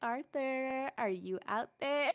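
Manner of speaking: mock call across distance. Retelling calling out for someone in the cafeteria: imitating calling out. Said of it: "call out for someone".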